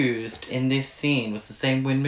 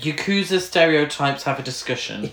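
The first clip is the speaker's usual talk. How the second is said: usual speaking voice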